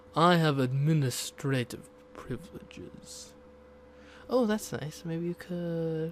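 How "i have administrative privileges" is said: loud, menacing, intimidating voice. Picking the last dialogue option, the speaker reads it in a threatening voice. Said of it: "I should like be talking in a more threatening voice".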